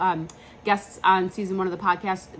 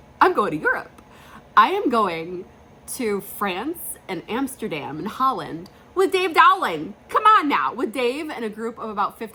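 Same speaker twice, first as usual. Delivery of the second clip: loud, tearful, overjoyed gushing; 3 semitones higher, 5 dB louder than usual. Speaker announcing a Europe trip with Dave Dowling, teary and excited. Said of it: "I'm tearing. I'm so excited".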